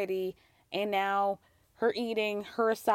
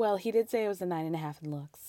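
put-on smug tone; 2 semitones lower than usual. Acting out what a woman said earlier, imitating her in a mock-smug way. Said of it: "she's like very smugly goes".

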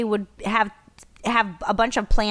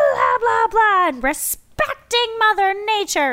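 high, loud mock blah-blah rant. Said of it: "I was just like".

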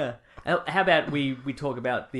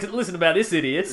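loud, scornful, mocking, jeering tone; 3 semitones higher, 5 dB louder than usual. Imitating the other speaker paying out on a sender: imitating someone mocking. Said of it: "You wouldn't bring it up to pay out on him".

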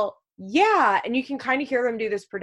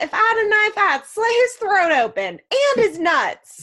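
put-on shrill, very high, loud screech; 11 semitones higher, 5 dB louder than usual. Retelling a skit where a man screams a threat, retelling a scream. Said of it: "And then he screams".

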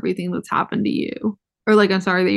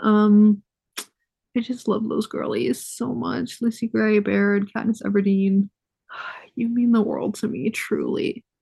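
moved, gushing voice, feelings showing through; 2 semitones higher than usual. Telling viewers how much her favorite characters mean to her, getting emotional. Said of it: "I'm getting emotional now".

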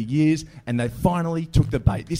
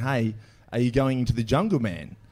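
normal talking voice

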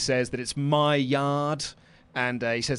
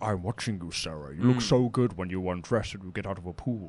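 put-on creepy, distorted voice, lower; 6 semitones lower, 4 dB quieter than usual. Retelling the hidden stalker's voice on a videotape: imitating a creepy distorted voice. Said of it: "this sort of distorted voice going like".

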